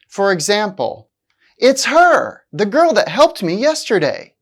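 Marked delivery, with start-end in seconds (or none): 1.5-2.4 "her" hit hard, leaned on. Explaining stressed function words, speaker gives an example with stress on her. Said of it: "it's still stressed because the speaker wants to emphasize her".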